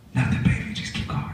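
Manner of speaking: mock whispering. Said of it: "My brother just only talks in a whisper".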